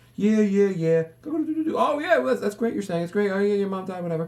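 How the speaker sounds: distracted, absent replies. Mocking people who keep looking at their phones while someone talks: imitating a distracted phone user. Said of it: "everyone interacts you by looking at their phone, being like".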